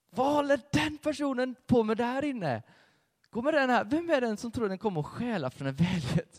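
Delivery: high-pitched, loud, outraged angry cry.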